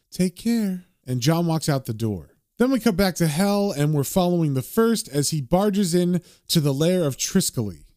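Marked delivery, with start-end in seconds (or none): 0.1-0.8 sleepy, drowsy murmuring voice. Reading a comic aloud, a wife rolls over in bed: sleepy voice. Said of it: "she says sleepily".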